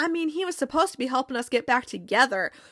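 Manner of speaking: ordinary talk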